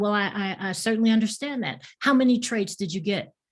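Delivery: ordinary talk, nothing marked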